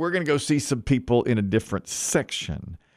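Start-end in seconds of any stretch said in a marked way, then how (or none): none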